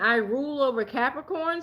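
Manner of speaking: usual speaking voice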